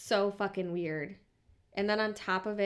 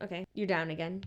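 ordinary talk, nothing marked

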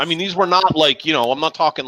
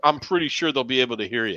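ordinary delivery

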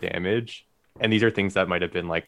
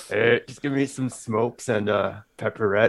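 put-on raspy, rasping older man voice; 4 semitones higher than usual. A co-host playing a guy at a gas station talking to an older dude: raspy gas-station guy voice. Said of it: "I love how raspy your voice gets".

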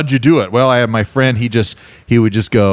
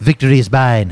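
put-on cartoon-baby voice. Asked to do Stewie for real, the speaker obliges: Stewie impression. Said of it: "Can you just say victory is mine?".

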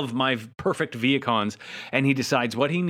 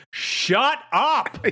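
put-on very high-pitched, shrill yell; 13 semitones higher, 3 dB louder than usual. Retelling yelling at the screen while watching, retelling own yell. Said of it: "literally yelled at the screen".

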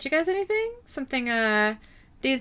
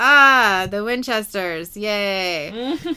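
very slow, very drawn-out, dripping sarcastic drawl; 2 semitones lower than usual. Retelling a scene where one character greets the Winchesters: imitating a sarcastic remark. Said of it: "Harry very sarcastically says".

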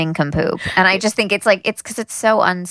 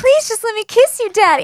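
mock hysterical crying, higher; 3 dB louder than usual. Retelling a scene where she begs him: imitating hysterical crying plea. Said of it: "is crying and getting really hysterical".

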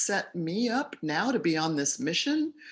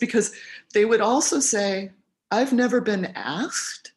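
emotional, choked-up, near-tearful, voice catching; 3 semitones higher, 5 dB louder than usual. Recalling people thanking them for asking about their lives, choked up. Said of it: "I'm getting choked up even remembering this".

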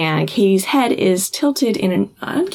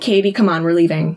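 plain

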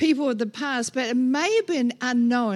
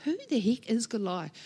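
ordinary talk

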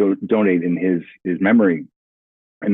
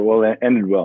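ordinary talk, nothing marked

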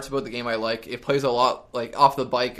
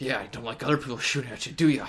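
put-on always-angry, winded, breathless, rushed talk; 3 dB quieter than usual. Describing a game character's line after a kill, mimicking angry, out-of-breath talk. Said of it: "He speaks like he's always angry and sort of out of breath".

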